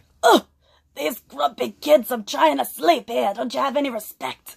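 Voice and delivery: put-on old New York man voice. Giving him a voice of his own, old New York man accent. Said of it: "I used to do this voice for him where he was like an old New York man".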